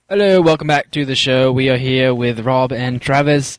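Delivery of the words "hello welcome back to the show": fake, laid-on put-on British accent. Welcoming listeners back to the show, in a put-on british accent. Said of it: "why the fuck you're talking with a British accent".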